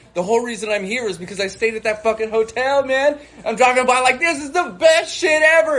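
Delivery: mock very high, loud, excited scream. Recalling driving past a hotel they once stayed at, retelling excited screaming. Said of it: "And I'm like screaming".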